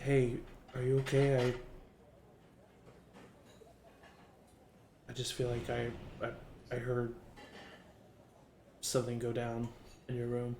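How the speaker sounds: soft, hushed whisper under the breath. As a character side-hugging the listener and checking on them, whispering. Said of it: "she whispers to you".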